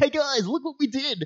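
high, smug, proud, self-congratulating tone. Mocking the game makers who patted themselves on the back: imitating self-congratulating designers. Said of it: "they patted themselves on the back".

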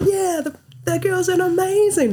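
mock very high, stretched-out, drawn-out shout. Retelling what they yelled out to a group after the World Cup, retelling a yell. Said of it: "I was like yelling out".

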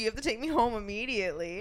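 ordinary talk

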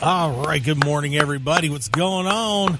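rough, scraped, raspy voice. The host greets everyone at the start of the show, in a raspy sore-throat voice. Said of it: "I can talk like that because my throat's sore".

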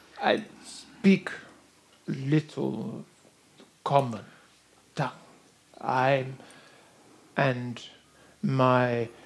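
stuttering, halting, searching for words. Voicing a character greeting the party in broken common tongue: stuttering, searching for words. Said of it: "he stutters for a minute".

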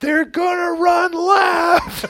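very high screaming, left stretched and drawn out. Recalling watching Denver highlights in an audience with son and wife; retelling a scream. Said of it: "I'm screaming in this audience".

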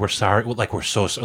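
ordinary talk, nothing marked

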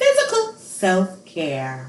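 swooping TV commercial announcer voice. Repeating the episode's topic title like a commercial: commercial voice. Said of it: "I like a commercial".

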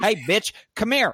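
very high-pitched, put-on coarse caricature voice.

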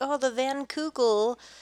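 put-on goofy voice, high, slow and drawn out. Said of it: "goofy, like".

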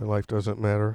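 super sad, very low, quiet, hushed, gloomy. After being told to go ahead and speak, super sad. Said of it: "he's Matt's super sad right now".

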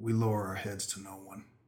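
whispering. A player's character answers the dragon rising to meet him, whispering. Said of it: "he whispers".

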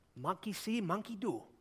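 bad put-on Chinese accent. Speaker retells a man's remark to a pregnant woman: bad chinese accent. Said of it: "I'm really bad at the Chinese accent".

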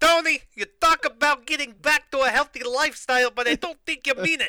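put-on heavily laid-on Italian-American mobster accent. Retelling Emily's condition for going back to healthier meals, Sopranos-style accent. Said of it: "an episode of The Sopranos of your fucking accents".

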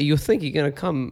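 mafia tough-guy voice. Picturing the dog as a mafia figure: Christopher Walken voice. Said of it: "I'm doing Christopher Walken".

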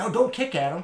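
loud, high-pitched, angry yell. Retelling what the owner yelled after scooping up his dog: imitating someone yelling. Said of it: "and he yells at me".

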